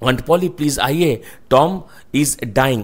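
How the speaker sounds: ordinary delivery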